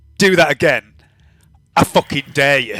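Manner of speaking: play-acted sudden, heated, fed-up angry tone. Speaker recounts confronting a driver who kept opening his boot, retelling an angry threat. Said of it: "I just sort of got angry and went".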